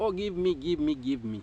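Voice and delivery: mock grasping plea, repeated begging. Imitating someone who asks a rich neighbor for things: imitating someone begging. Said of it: "you don't have to be begging like".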